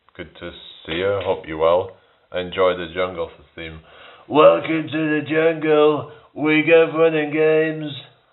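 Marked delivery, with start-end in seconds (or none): 4.3-8.0 very high, slow, drawn-out, deliberate put-on accent. Greeting Andrew and telling him to enjoy the jungle theme, in a Trump accent. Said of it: "I just did it in a Trump accent".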